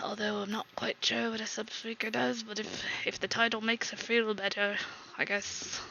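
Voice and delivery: very hushed, mumbled, half-whispered aside. A game master voices a character speaking to another character, half-whispering aside. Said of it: "going to hear him kind of whisper to Lanithus".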